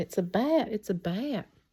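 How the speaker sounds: put-on yell, called out slowly and mildly. Retelling a panicked moment when a bat got inside: imitating own past yelling. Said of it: "and I'm yelling".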